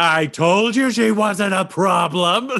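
very slow drawn-out shout. Voicing a character who yells at two others: character yelling. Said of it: "Butthole just yells at Quinny and Moss".

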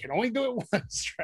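breathy, whispered cartoon duck voice. Quoting a cartoon line: Daffy Duck voice. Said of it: "Daffy Duck".

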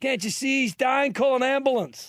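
shrill, very high, loud yelling. Retelling a film scene where a character yells for help: imitating someone yelling. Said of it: "he starts yelling".

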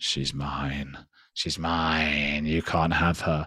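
low, slow, hushed demonic voice, "mine" dragged out. Retelling what came out of a screaming woman: demonic voice. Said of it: "this sort of demonic voice coming out".

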